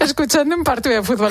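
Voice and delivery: high, laughing delivery.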